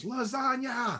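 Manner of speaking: very high, piercing, shrieking scream. Narrating a story as a character grabs his sister's arm, screaming. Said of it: "and screams".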